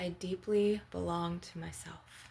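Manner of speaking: ordinary talk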